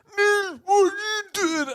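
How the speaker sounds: very high-pitched teacher voice, calling out. Retelling how a chemistry teacher spoke: imitating a chemistry teacher. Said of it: "a chemistry teacher who was real".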